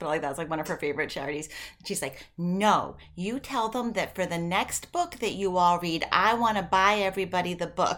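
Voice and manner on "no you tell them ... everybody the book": put-on Southern accent. Retelling what Gigi said, in Gigi's Southern accent. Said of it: "She said it in her Southern accent".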